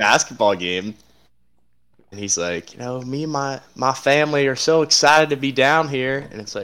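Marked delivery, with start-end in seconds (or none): 2.7-6.3 fake Southern accent, pitched a bit higher. Retelling a coach's speech at a basketball game: Brian Kelly fake Southern accent. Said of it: "faking a Southern accent".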